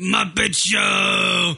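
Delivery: puppet-character cry with "show" stretched long. Describing a DVD menu segment, imitating Animal: Animal voice. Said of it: "He's just going".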